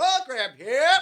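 vendor call-out voice. Explaining how he sold over 500 programs, demonstrating the call: program vendor's call. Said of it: "You got to have the right voice".

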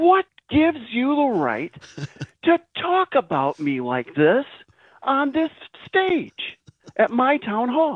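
screaming mad, high, slow furious yell.

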